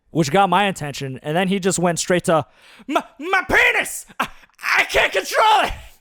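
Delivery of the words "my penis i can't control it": very high, very slow, drawn-out panicked cry. Retelling what he blurted out, imitating someone panicking. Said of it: "Like he was in a panic".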